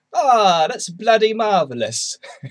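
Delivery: very high, very loud put-on English accent. Speaker explaining they slip into an English accent when drinking; little bit of English accent. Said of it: "little bit of an English accent".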